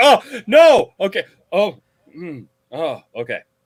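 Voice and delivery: very slow, halting, flustered, caught-off-guard fumbling. Imitating how the other speaker sounded at a question: imitating Matt's flustered reaction. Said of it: "You can hear it in his voice".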